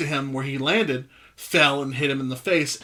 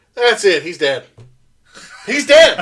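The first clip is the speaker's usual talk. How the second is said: very loud, high, belted commentator-style call; 5 semitones higher, 9 dB louder than usual. Retelling someone falling through the ring: imitating Jerry Lawler's real voice. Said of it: "in his real voice".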